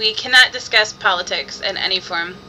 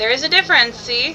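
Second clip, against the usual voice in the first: ordinary delivery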